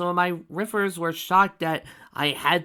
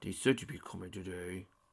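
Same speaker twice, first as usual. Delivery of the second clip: very low, quiet, dazed grumbly rumble; 12 semitones lower, 15 dB quieter than usual. A big dragon creature greets Spike, who has come to see him, in a low grumbly voice. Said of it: "His voice was low and grumbly".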